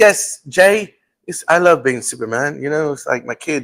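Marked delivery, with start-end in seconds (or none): 0.0-2.6 slow, put-on British accent. Retelling a Tonight Show appearance, quoting the guest answering Jay: Henry Cavill British accent impression. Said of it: "And he's like".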